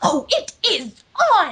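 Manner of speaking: manly, very slow, drawn-out, swooping prissy voice. Retelling a boy talking behind the speaker at a new school, manly Rarity impression. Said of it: "in his best manly rarity impression".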